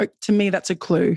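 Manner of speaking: ordinary talk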